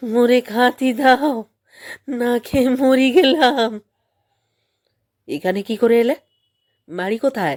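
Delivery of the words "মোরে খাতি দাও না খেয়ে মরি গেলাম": fearful thin squeak, much higher, louder. Reading a story, voice an old man found under a bush: frightened squeaky voice. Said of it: "ভয়ের সুরে চিঁচি করে বললে".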